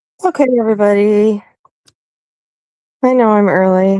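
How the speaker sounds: sleepy, drowsy voice. Arriving early and greeting everybody before a birthday wish, sleepy and drowsy. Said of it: "I'm kind of falling asleep".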